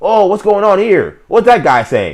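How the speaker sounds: shrill, very high, loud, swooping sing-song yelling. Mocking a commentator during a game: imitating Tony Romo yelling. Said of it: "he's yelling".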